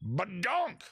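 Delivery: high, shouted outburst. Speaker going through trivia questions, yelling. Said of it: "Sorry, I'm yelling".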